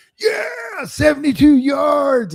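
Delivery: very high, shrill, swooping excited yell. Retelling a clip of an excited touchdown celebration: imitating someone yelling. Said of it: "He's yelling like".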